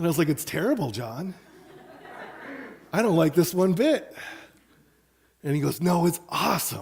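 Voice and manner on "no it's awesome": eager, excited, upbeat, insistent tone. Retelling what John said back then, imitating John's enthusiasm. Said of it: "And he was so enthusiastic".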